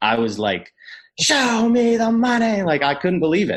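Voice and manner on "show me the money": mock very high, drawn-out, disbelieving scream. Retelling hearing about a big contract: Cuba Gooding Jr. in Jerry Maguire shouting. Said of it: "I was like Cuba Gooding Junior in Jerry Maguire".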